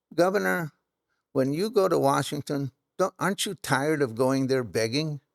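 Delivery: normal talking voice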